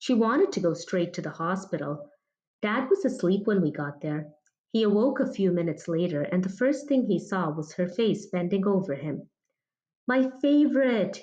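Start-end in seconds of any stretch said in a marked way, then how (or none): 10.1-11.2 high, joyful exclaiming, drenched with joy. Narrator voicing a father waking in hospital to see her face, joyful exclamation. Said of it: "he exclaimed in a tone drenched with joy".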